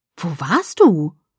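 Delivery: distrustful, wary, suspicious tone. Jessica confronts the narrator, who has just come back with Edward: suspicious. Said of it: "Jessicas Stimme klang argwöhnisch".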